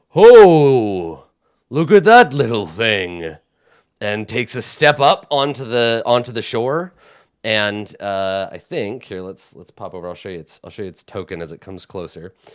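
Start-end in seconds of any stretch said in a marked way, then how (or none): 0.1-3.3 huge, deep, very loud, rumbling booming giant voice. Narrating a game, voice the giant as it turns toward the players: deep rumbling giant voice. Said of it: "in a deep rumbling voice".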